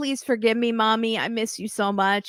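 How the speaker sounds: mock sobbing, begging through tears. Retelling a scene where a daughter cries on the phone, imitating a crying plea. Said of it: "Jasmine cries and she says".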